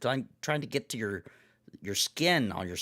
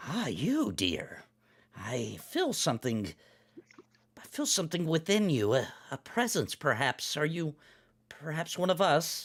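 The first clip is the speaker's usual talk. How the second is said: put-on croaky, witchy old crone voice; 4 semitones higher than usual. The hag answers Fife, who asked what treasure she meant: croaking hag voice. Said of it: "the hag croaks".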